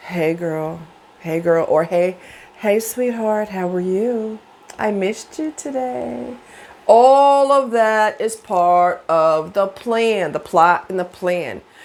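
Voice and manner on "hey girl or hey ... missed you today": put-on sexy voice, slower. Describing how someone you desire plays you, imitating a sexy voice. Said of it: "playing you with that sexy voice".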